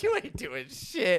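play-acted, very high, shrill, loud, laughing, jeering voice. After packing a bag at fourteen, quoting mom: imitating mom mocking and laughing. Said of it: "she starts pointing and laughing at me".

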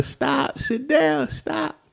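mock strained, very high, drawn-out raspy cry. Retelling the moment he jumped around, re-creating screaming at him to stop. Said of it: "I'm screaming at him".

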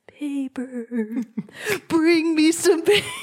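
high, eerie, spooky ghost voice. Telling of knocking on a closed bathroom door and a ghost answering, ghostly voice. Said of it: "a ghostly voice says".

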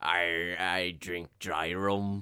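put-on pirate character voice. Asked to say it again, repeating the line, pirate voice. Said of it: "Say it again".

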